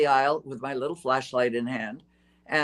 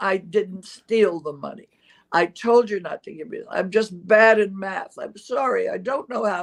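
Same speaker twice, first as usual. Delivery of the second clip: high, tearful, pleading mock crying; 5 semitones higher than usual. Retelling pleading with a manager after being fired: imitating own past crying. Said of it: "And I stood there crying".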